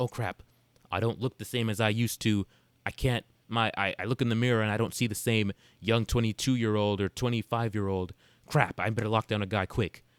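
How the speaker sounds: normal talking voice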